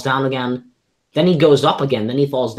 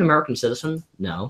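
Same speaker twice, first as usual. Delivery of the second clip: normal talking voice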